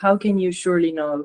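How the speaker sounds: ordinary delivery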